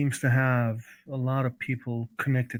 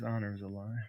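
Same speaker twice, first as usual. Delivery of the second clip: low, very hushed, quiet under-the-breath grumble; 4 semitones lower, 12 dB quieter than usual. Voicing Damien in an argument about honor: muttered under his breath. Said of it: "From under his breath".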